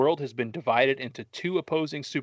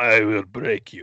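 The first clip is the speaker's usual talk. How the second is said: put-on loud Russian accent, full of threat; 3 semitones lower, 7 dB louder than usual. Retelling a fight, voicing the russian guy in a russian accent. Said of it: "Great Russian accent".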